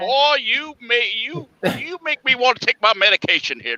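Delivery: very high cartoon rooster voice with Southern accent. Talking about a friend's accent, slip into a Foghorn Leghorn voice. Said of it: "Foghorn Leghorn".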